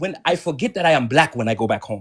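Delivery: put-on Yoruba-inflected Nigerian English accent. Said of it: "Stop with the accent".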